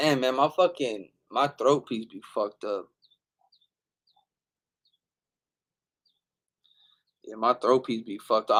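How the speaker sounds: rough, fading voice. Talking to viewers while losing voice: losing voice. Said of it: "I'm losing my voice right now".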